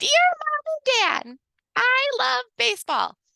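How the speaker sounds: very high, swooping, bad put-on unicorn voice. Reading aloud the bad unicorn stuffed animal's letter home, in a bad unicorn voice. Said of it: "I always like say this in a bad unicorn voice".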